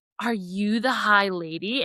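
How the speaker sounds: soft, slow, drawn-out, hushed half-whisper. Retelling a book scene, voicing a hidden being: retelling a half-whisper. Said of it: "it whispers to Feyre".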